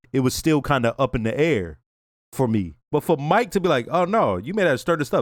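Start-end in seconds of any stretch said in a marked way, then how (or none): none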